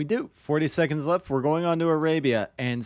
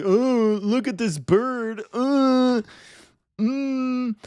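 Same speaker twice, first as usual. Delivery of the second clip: very high, very slow, long dragged-out musing "mm"; 9 semitones higher, 4 dB louder than usual. Casting a match, imitating another caster's impression of him. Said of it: "me doing an impression of N B L doing an impression of me".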